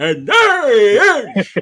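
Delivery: booming, huge, loud, grand, drawn-out delivery. Doing an old impression of a guest introduction: Anthony Gargano impression. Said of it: "I gotta do my old Anthony Gargano".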